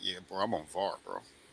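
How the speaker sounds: very quiet, soft, proud, boastful bragging. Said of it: "your chest just sticks out".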